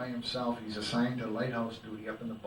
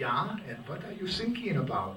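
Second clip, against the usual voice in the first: put-on German accent, high-pitched and swooping; 5 semitones higher than usual. Telling a joke, acting out a young German answering the radio: quiet German accent. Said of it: "Very quietly".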